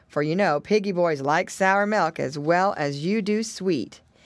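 plain

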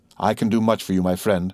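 plain reading voice

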